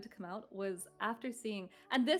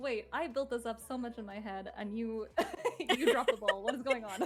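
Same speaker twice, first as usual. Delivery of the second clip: ordinary talk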